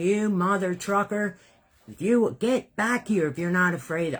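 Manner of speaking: acted, fierce, heated angry yelling. Recounting running out after a scammer and yelling at him: retelling an angry yell. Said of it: "And I'm yelling at him".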